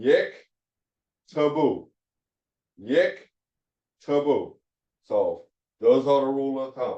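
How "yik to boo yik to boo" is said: yik to boo split, long pauses, raised pitch. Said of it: "The second is the vocal".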